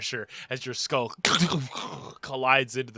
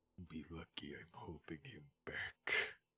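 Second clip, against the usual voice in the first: deep, very quiet, hushed low voice; 8 semitones lower, 21 dB quieter than usual. As Kadan twitches, holding someone against the wall, a lower voice comes through. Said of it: "a lower voice come through".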